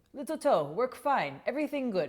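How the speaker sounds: terrible fake Japanese accent. Retelling a Japanese shiatsu master's words to a client: terrible Japanese accent. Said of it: "sorry, my accent's terrible".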